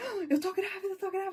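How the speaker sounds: frantic, desperate shouting, pitched very high. Retelling seeing a test result, imitating her own desperate shouting. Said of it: "Comecei a gritar desesperadamente".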